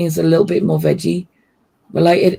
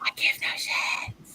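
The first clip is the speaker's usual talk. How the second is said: hushed whisper, much quieter. Talking with the other speaker about the meal, the speaker whispers. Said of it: "Why are we whispering?".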